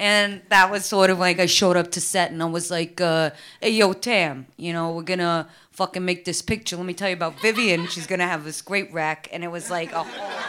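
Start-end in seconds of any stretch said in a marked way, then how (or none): 3.0-9.3 thick, strong, put-on New York accent. Recalling showing up to set and quoting own words: strong New York accent. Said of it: "He kind of talks like this".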